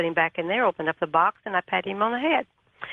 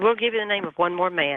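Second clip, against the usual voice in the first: plain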